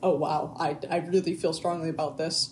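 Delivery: ordinary delivery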